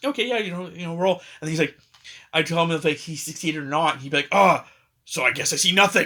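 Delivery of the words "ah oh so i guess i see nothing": put-on dwarf accent, louder, slower. Retelling a player's in-character reply, the speaker imitates a dwarf accent. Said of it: "got the accent together, like if he was a dwarf".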